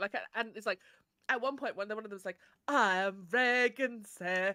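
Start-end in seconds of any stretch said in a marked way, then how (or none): 2.7-4.5 loud, very slow, grandly posh delivery. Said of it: "Is that how you're gonna talk?".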